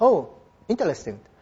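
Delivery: offhand, dismissive, uninterested, not-really-listening tone. Showing a way of replying while not listening at all: mock-uninterested, not listening. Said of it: "くくったような言い方もありますね。全然話聞いてないって感じです。".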